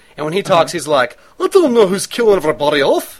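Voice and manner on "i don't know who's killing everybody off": put-on speaking in a Scottish accent. Describing how a man talks in it, in a Groundskeeper Willie voice. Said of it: "He sounds like Groundskeeper Willie in it".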